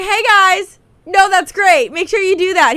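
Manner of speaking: high, loud, grating, obnoxious put-on voice. Imitating Jericho to compare with the annoying voice: imitating Jericho's obnoxious voice. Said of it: "is that not kinda similar to when he's like".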